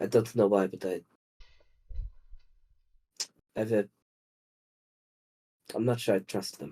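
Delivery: muttering under breath. A player speaks in character during a group roleplay, muttering under breath. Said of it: "I'm gonna say under my breath".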